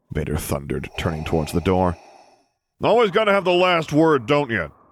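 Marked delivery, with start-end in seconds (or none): 2.8-4.6 very high, booming, bellowing. Solo calls after Vader as he walks away, bellowing after him. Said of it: "Solo bellowed after him".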